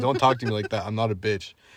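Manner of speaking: normal talking voice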